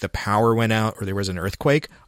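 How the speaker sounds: plain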